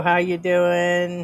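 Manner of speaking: put-on New York accent. Host greeting a woman on the stream, New York accent. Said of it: "In your New York accent".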